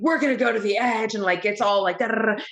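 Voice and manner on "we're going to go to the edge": harsh, hard-edged, unsympathetic coach voice, no compassion. Describing coaches' style, imitating an edgy coach without any compassion. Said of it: "fucking without any compassion".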